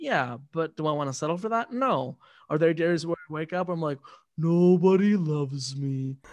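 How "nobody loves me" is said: cartoon donkey character voice. Speaker describing her bad mornings to her co-host, in an Eeyore voice. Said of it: "I just wanted to use the voice".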